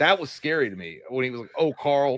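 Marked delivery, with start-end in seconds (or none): 1.6-2.2 play-acted voice full of sympathy. Retelling a movie scene, quoting the character Sam: imitating Sam's sympathetic voice. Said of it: "there was sympathy in his voice".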